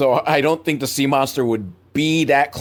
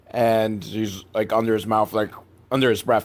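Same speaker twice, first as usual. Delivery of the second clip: ordinary delivery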